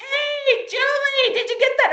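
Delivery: put-on very high, loud, carrying shout. Describing how staff talk near patients, the speaker imitates someone shouting across the room. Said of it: "If they're shouting across the room".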